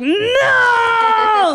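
play-acted, very high, shrill, piercing scream. Acting out a scream while telling a story: scream. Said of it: "like that kind of scream".

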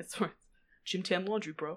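New Jersey accent. Showing the others the jersey accent they can do: new jersey accent. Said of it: "Joyzy I can do".

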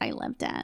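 soft, breathy mock whisper.

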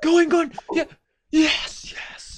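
very high, loud, cheering screams. Retelling watching the game, screaming at the tv: retelling screaming at the tv. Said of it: "screaming at the T V".

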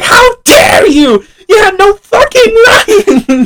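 very high-pitched, loud screaming. Recounting a game, the player acts out Kenny's reaction, imitating Kenny screaming. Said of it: "you just hear Kenny screaming like".

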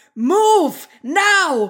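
sudden, very loud, high yell into the mic. Recounting how a calm man on stage suddenly gave a command; retelling a yell. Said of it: "Sorry, wenn ich gerade ins Mikro gebrüllt habe".

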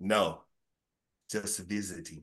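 put-on, laid-on-thick Russian accent. Telling a joke, voicing Putin at customs: Putin Russian accent. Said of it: "It's about the best Russian I got".

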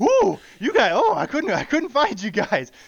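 acted, winded, breathless, high, drawn-out panting. Retelling a story's ending, act out the cop arriving, imitating being out of breath. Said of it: "all out of breath".

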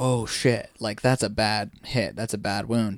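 usual speaking voice

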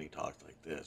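very low, hushed, level monotone drone. Speaker describes the host of the podcast Sleep With Me, imitating his monotone. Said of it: "he talks very monotone".

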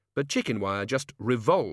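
ordinary delivery

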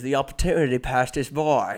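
put-on thick, heavy British accent, laid on throughout. Retelling what a guy in the story replied, the speaker uses a thick British accent. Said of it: "in his thick British accent".

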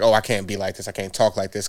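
plain

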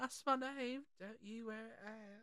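put-on Cockney accent. Retelling the great reveal, the speaker voices Glenda in a Cockney accent. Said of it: "You went Cockney".

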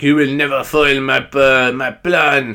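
put-on, exaggerated French accent. Retelling what a man said about his plan, in a stereotypical French accent. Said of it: "so he's very stereotypical French anyway".

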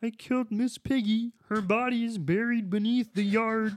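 nasal puppet frog voice. Asked for more impressions, the speaker does a Kermit the Frog voice. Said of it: "I can kind of do a little Kermit the Frog".

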